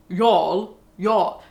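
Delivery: put-on posh, upper-crust Etonian English accent. Imagining a posh Etonian saying the word; [name] posh Etonian impression. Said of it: "imagine like some posh Etonian Bullingdon Boys wanker".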